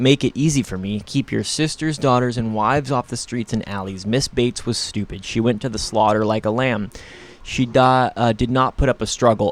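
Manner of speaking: ordinary talk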